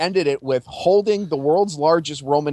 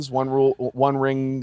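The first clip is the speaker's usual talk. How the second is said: ordinary talk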